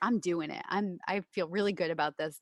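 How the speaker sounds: usual speaking voice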